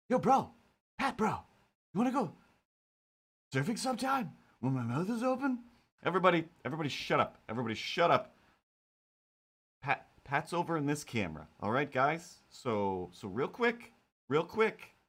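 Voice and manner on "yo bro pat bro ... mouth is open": cat character voice pitched way up. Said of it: "I can never remember this voice".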